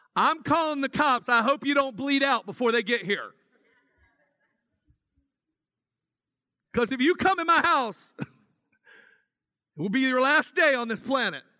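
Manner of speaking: put-on loud bold voice. Voicing what most of the audience would say to a home intruder, said loudly. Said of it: "say this loudly".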